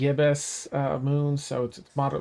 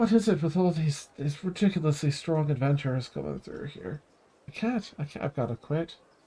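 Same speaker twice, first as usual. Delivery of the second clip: mumbled, grumbling aside under breath. Narrating a guide who turns to the adventurers, muttering under her breath. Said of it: "you hear her kind of mutter under her breath".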